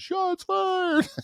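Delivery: very high, shrieking, panicked scream. Retelling hearing sustained gunfire outside, the speaker reenacts screaming, retelling a panicked scream. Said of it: "And I'm screaming".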